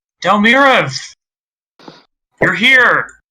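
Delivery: high, loud voice calling out. Narrating a scene, voicing someone behind the listeners, calling out from behind. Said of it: "you hear a call out behind you".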